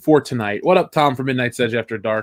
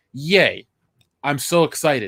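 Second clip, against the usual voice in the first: mock enthusiasm, dripping with sarcasm, fake excitement; 2 semitones higher than usual. Speaker reacting to news of a new Star Wars series, with sarcastic fake excitement. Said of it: "Listen to the excitement in my voice".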